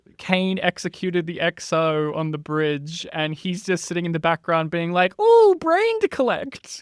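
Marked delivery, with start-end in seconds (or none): 5.2-6.8 loud, very high evil scientist voice. Imagining a background character as an evil scientist: evil scientist voice. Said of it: "He's like an evil scientist".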